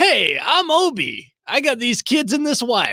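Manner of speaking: slow, easy, unhurried friendly voice. Showing the others how the cast impersonates each other: Obi impression. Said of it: "my Obi impression".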